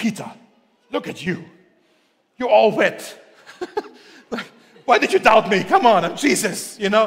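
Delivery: reproachful, exasperated, impatient, condemning scolding. A speaker shows how Jesus' words to Peter are often read, condemning Jesus voice. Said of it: "in a very kind of condemning tone".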